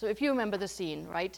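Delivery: plain reading voice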